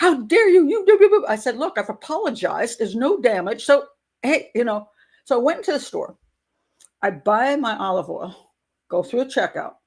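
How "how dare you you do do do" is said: shrill, very high, full-volume shouting. Retelling a confrontation, imitating a woman still shouting from her car. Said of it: "she's still shouting at me from the car".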